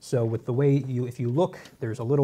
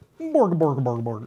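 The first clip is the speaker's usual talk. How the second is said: mock Swedish babble with repeated syllables; 2 semitones higher, 4 dB louder than usual. Speaker tries a Norwegian accent and ends up with a Swedish Chef impression. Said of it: "I sound like the Swedish chef".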